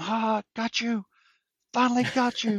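play-acted excited, very high-pitched, pumped-up hollering. Retelling a hunt where a companion celebrates the shot: imitating Paul screaming. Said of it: "starts screaming at him".

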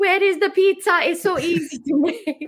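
put-on very high, little Italian accent. Retelling a man asking a cook for pizza, imitating an Italian accent. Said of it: "in his little Italian accent".

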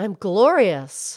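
with real conviction. The show's host shows Mildred how to say it: said like you mean it. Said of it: "say it like you mean it".

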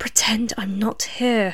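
soft, hushed whisper under the breath. X slides down in the booth and answers Celia's question, whispered. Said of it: "X whispered".

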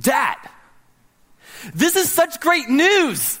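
mock very high, swooping, eager, excited voice. Father retelling his son's reaction to news, in the son's enthusiastic Seth voice. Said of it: "he had this enthusiasm about him".

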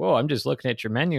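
put-on, startled, flustered, defensive, caught-off-guard tone. Retelling ordering from an impatient woman at the counter, imitating a flustered customer. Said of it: "you'd be like super flustered".

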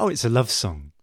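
normal talking voice

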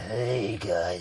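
spooky, creepy voice. Describing a creepy taxi driver character: spooky Gus voice. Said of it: "He's spooky. He's really spooky. He's got, like".

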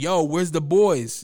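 put-on shouting. Speaker acting out how they yelled to their partner, retelling a yell. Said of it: "I hop up and I'm yelling".

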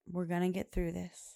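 plain

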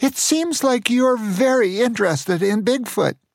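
small, high, squeaky voice, barely understandable. Reading a story aloud, an old man speaking: little squeaky voice. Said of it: "said in a little squeaky voice".

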